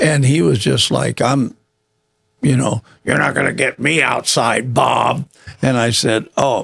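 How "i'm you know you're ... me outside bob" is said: put-on gruff old-man voice. Retelling what an old man said to him, imitating Ben, gruff old man. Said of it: "old man gruff".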